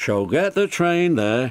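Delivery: ordinary delivery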